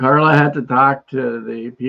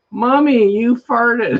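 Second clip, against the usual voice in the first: put-on high, loud, blurted out like a child. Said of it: "really loud".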